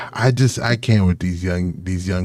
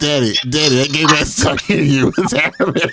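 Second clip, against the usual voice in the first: put-on kid voice, much higher pitch; 7 semitones higher than usual. Speaker acts out a kid asking his dad a question, in Riley kid voice. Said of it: "Just give it that Riley voice".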